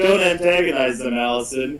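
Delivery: ordinary delivery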